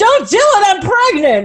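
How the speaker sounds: slow, emphatic, high, drawn-out acted yelling. Retelling a TV plot, imitating Scully yelling. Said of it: "every three seconds she's yelling".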